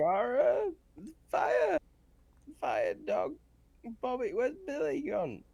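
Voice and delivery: high, put-on sobbing voice with swinging pitch. Playing a child character who is crying about fire. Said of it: "I'm crying and I'm just like".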